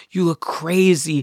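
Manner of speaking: play-acted shrill, high, loud scolding yell. Retelling being driven home high at 3 a.m., imitating mom yelling. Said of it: "she's yelling at me in the car".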